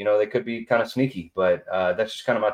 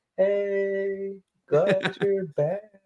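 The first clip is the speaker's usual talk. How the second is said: mock flirtatious voice, higher; 11 semitones higher than usual. Retelling a woman greeting a returning player: imitating a flirty voice. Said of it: "her voice sounded like, it was like she was trying to get chose".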